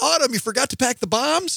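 really loud announcing voice. A parent retells his son calling out to his daughter, retelling a really loud call. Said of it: "says in a really loud voice".

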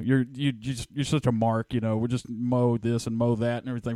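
plain

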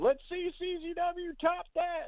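play-acted very high, drawn-out triumphant yell. Retelling how an owner jumped around after a stabbing: imitating someone yelling. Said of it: "jumped around like fucking Yosemite Sam yelling".

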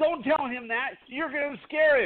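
high-pitched, shouted, scolding yelling. Speaker retells what a man's pregnant wife yelled at them: retelling a yell. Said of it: "she was yelling at me going".

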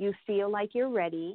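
ordinary delivery

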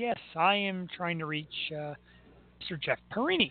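mild, gentle-mannered, soft voice. Retelling a phone call, quoting the caller: imitating a soft-spoken voice. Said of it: "this very soft-spoken voice that says".

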